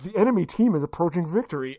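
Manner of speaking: normal talking voice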